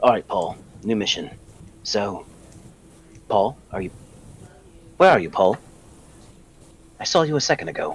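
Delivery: soft hushed whisper under the breath. Whispering to a companion about a new mission: whispering. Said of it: "I turn around and I whisper to Paul".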